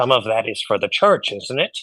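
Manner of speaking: quiet, hushed stage whisper. Half-whispering in character to another character about money for the church: half-whispering. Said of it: "I'm gonna whisper to him".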